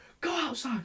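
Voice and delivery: put-on high, screamed yell. Retelling how a teacher yelled at him: imitating a teacher yelling. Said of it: "He yells and he goes".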